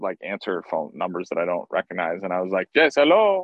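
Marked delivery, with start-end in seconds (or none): 2.7-3.4 odd put-on very high, loud voice. Retelling answering a call from an unknown number: imitating own weird phone voice. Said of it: "I answered the phone in a weird voice".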